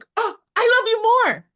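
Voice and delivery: put-on shrill, very high, very loud excited gushing. Retelling meeting someone admired on the street: imitating her own excited freaking out. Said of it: "I'm freaking out".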